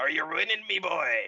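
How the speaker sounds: put-on pirate-style villain voice. Retelling a friend's Discord greeting bit: Pirate Palpatine voice. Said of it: "follow that up with Pirate Palpatine going".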